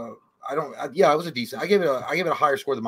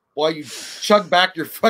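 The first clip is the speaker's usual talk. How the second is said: ordinary talk, nothing marked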